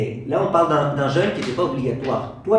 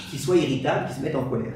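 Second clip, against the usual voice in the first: ordinary delivery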